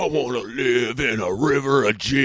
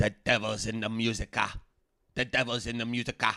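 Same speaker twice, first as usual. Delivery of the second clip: quieter put-on grandmother voice; 9 dB quieter than usual. Retelling what grandma said about rock music: imitating grandma. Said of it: "She'd be like".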